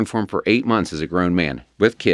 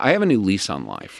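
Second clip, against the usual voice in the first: normal talking voice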